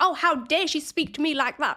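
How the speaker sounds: put-on, high, affronted, indignant shouted outburst. Acting out a person reacting to having their shame challenged, imitating someone shouting. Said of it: "this person is shouting".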